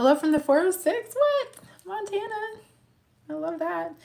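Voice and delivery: high, loud, excited called-out shout.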